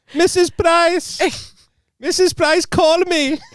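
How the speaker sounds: unsure, very high put-on Welsh accent. Chatting about not sounding welsh, the speaker tries a put-on welsh accent. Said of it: "I don't know if that was the Welsh accent".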